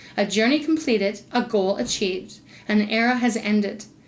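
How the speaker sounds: ordinary delivery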